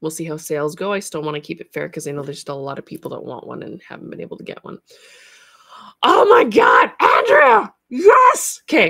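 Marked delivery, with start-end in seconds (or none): 6.0-8.6 very high, loud, shrill, drawn-out scream, swooping wildly. Speaker breaks off mid-talk and calls out to andrea, screaming. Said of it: "Sorry for the scream".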